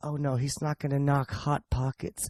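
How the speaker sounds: soft, slow, hushed, drawn-out weird voice. Retelling a comic's joke bit: Jim Gaffigan's weird audience voice. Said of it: "he's doing this little weird audience voice".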